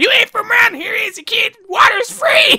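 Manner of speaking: very high-pitched, gross, disgusting-sounding voice. Speaker acts out what a man said to him, in a disgusting Roshi voice. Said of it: "such a disgusting voice".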